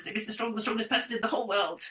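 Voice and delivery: very rushed, rapid-fire, rattled-off storytelling. Demonstrating a vocal exercise, the speaker tells a story really fast. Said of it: "Talk really fast".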